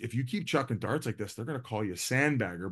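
very quiet, soft-spoken voice. Retelling what Whit said during a golf match: imitating Whit speaking quietly. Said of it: "But he said it very quietly".

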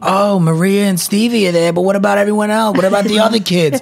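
put-on Brooklyn accent. Retelling how relatives reacted to the wedding kids, in a brooklyn accent. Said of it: "I don't know why I did that accent, but I'm from Brooklyn".

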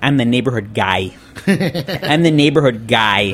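put-on Chicago neighborhood-guy accent. Quoting an underdog chicago politician describing himself, in a chicago accent. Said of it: "with a Chicago accent".

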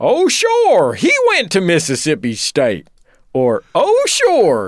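loud, swooping, wide-swinging put-on character voice. You see someone wearing college clothing and comment to your wife, in a classic Dan Aykroyd voice. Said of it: "Classic Dan Aykroyd voice".

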